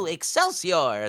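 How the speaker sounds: typical high-pitched nerdy scientist voice. Showing the voice first used in an audition: high-pitched nerdy scientist voice. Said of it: "quintessential, like, nerdy scientist".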